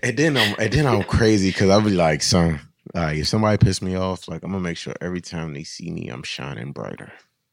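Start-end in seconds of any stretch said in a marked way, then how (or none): 6.1-7.1 put-on clenched-teeth voice, much lower and quieter. Describing what he'd say about someone who angered him: mock talking through clenched teeth. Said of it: "it's the teeth clench".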